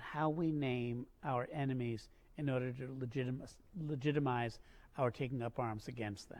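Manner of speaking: normal talking voice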